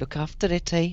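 distrustful, disbelieving tone at very high pitch. Repeating the other speaker's promise back to them, skeptical and distrustful. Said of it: "saying it in such a way like you don't believe me".

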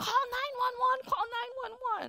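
mild put-on yell, high.

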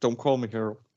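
meek and mild, soft, with no force. Retelling a film character's line: imitating a meek, mild line. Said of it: "so meek and mild with it".

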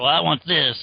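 put-on grumpy old man voice. Acting out a fan who wants traditional villains: imitating a grumpy old guy. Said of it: "one of those grumpy old guys who's like".

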